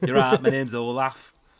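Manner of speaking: accent from Bolton. A speaker imagines a kid from Bolton named Olaf introducing himself: Bolton accent. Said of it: "Sounds alright in that accent".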